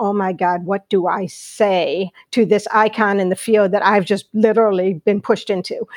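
normal talking voice

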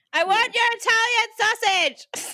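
very high, loud, shrill, drawn-out eagle screech. Reading a story aloud, a man repeats his line louder for his workers: screeched like a bald eagle. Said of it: "Steve screeched like a bald eagle".

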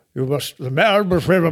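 put-on voice like an old wizard. Speaker quoting what Winston Churchill supposedly said: Gandalf-like voice. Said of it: "I don't sound like fucking Gandalf".

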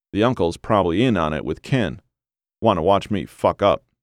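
ordinary delivery

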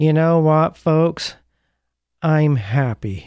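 sad-sack voice with no emotion. Retelling a favorite childhood cartoon's line into the camera: Droopy's melancholy emotionless voice. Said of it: "sort of melancholy voice".

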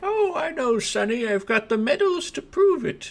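put-on wizened old granny voice, very high pitch. Narrator voices an old tabaxi woman replying to a character's praise, old granny voice. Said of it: "there is a old, wizened tabaxi woman who is seated next to it, and she's kind of in a little rocking chair, and she's knitting. / there is a old, wizened tabaxi woman who is seated next to it, and she".

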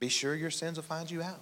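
gentle, sweet, soft little voice. Quoting a grandmother's warning about sins, in her sweet little voice. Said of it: "In a sweet little voice".

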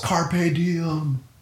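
high-pitched yell. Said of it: "he yells".

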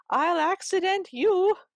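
very high, shrill screeching voice. Telling Cinderella, the stepmother answers Cinderella's excuse, screaming back. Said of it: "The stepmother screams back".

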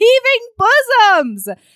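very high-pitched, loud screech. Retelling calling out a window to a stranger, retold screech. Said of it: "I screeched back".

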